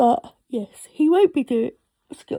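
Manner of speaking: talking through a yawn. Speaker narrating their field work with a worker that keeps getting stuck, yawning. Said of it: "I'm so sorry for yawning".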